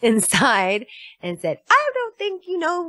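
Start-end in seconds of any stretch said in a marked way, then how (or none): 1.7-2.9 very high, motherly little voice. Retelling marching inside and speaking to a man: little mom voice. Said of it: "in, like, my little mom voice".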